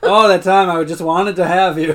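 play-acted careless, can't-be-bothered, slow, half-hearted delivery. Retelling a TV scene, imitating Jim saying it half-heartedly. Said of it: "He's saying it all half-hearted".

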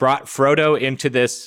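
plain

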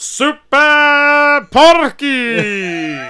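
loud announcer voice, drawn-out "Super". Retelling a wrestler's entrance, imitating a wrestling announcer. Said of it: "the announcer just going".

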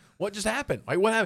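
high-pitched, alarmed disbelief. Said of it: "and I'm like".

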